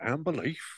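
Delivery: high-pitched, put-on Yorkshire accent. Imagining how a man from yorkshire would say it: imitating a yorkshire accent. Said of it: "I can imagine him saying".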